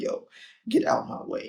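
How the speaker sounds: angry outburst. Retelling anger at other drivers, retelling own angry outburst. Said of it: "my anger took control for a second".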